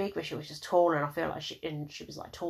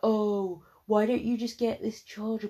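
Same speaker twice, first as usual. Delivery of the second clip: mock-condescending tone, higher and louder; 5 semitones higher, 4 dB louder than usual. Retelling what a girl at the dinner table said to you, mock-condescending tone. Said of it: "in this proper condescending tone".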